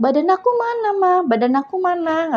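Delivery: put-on crying child voice, tearful. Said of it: "Sambil nangis-nangis".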